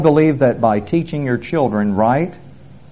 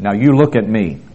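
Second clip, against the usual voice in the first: play-acted firm, commanding, authoritative voice; 2 semitones lower than usual. Retelling what the speaker says to people across the pews, in a put-on authoritative voice. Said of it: "I put on my authoritative voice".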